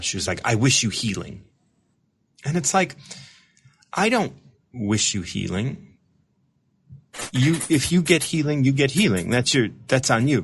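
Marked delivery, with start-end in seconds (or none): 0.4-1.4 mock condescending tone. Quoting an email one person sent: imitating a condescending tone. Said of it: "one person condescendingly one time sent me an email".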